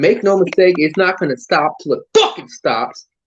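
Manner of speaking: worked-up, fired-up, intense, driven delivery. Before letting another speaker talk, the speaker says this fired up. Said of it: "I'm just getting fired up".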